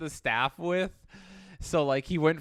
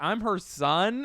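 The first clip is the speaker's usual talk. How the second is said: perfect put-on American accent, pitched up; 5 semitones higher than usual. Retelling answering a caller at work on the phone: perfect American accent.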